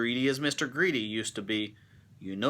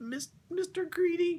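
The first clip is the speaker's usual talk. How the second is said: very high, frightened, stumbling squeak. Narrating a story, Mister Greedy answers a giant in a frightened squeak. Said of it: "he squeaked".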